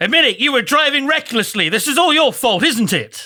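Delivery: very high, hammering, accusing yell. A player interrogates a man after an accident, yelling interrogation questions. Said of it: "I'm going to start yelling like questions".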